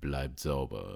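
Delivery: very low, deep, hushed movie-trailer announcer voice. Saying the sign-off phrase after a countdown: deep movie trailer voice. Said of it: "sagst du ihn mit so einer richtig schönen tiefen äh, Trailerstimme".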